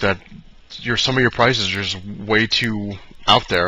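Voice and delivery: ordinary talk, nothing marked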